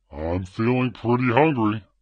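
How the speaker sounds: very deep, low ogre voice. Previewing the voice setting again, back to the ogre voice. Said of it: "I like the ogre voice better".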